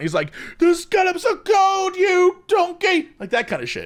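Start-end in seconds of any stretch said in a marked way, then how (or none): 0.6-3.1 slow, stretched-out, high-pitched scream. Retelling how Gordon Ramsay screams when food is late: imitating Gordon Ramsay screaming. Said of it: "he screams and freaks out".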